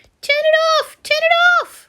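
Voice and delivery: very high, squeaky little dragon voice. Narrator reads a small dragon in a basin reacting to water: tiny squeaky dragon voice. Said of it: "the dragon was squeaking".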